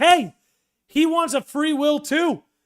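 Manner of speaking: voice cracking and breaking on a word. Making a point to viewers, voice cracking. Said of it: "you heard my voice crack".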